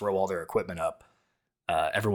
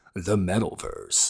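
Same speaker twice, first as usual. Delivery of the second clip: silly movie voice-over announcer voice. Retelling a joke just made: imitating own movie trailer guy voice. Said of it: "I did my stupid, like, movie guy voice".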